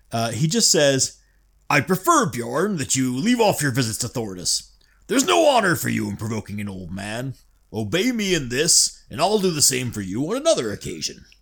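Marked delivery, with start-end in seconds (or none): 1.6-11.1 calmer, reasonable-sounding cartoon cowboy voice. Reading out a character's offer to stay away: slightly more reasonable Yosemite Sam voice. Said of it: "going more for a slightly more reasonable, uh, Yosemite Sam".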